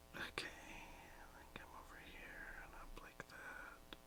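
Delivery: slow, very quiet, hushed whisper. Concentrating while gripping a pen, quietly whispering to oneself. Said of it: "I started whispering like you do".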